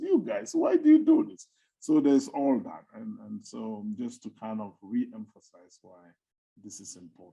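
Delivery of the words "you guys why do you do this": very high talking fish voice. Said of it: "they're telling me this".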